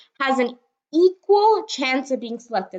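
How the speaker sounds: "equal" pushed up and wide.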